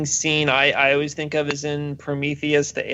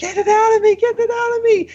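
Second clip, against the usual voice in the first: mock shrill, loud, very high screaming; 5 dB louder than usual. Retelling a film scene of a character strapped down: imitating someone screaming.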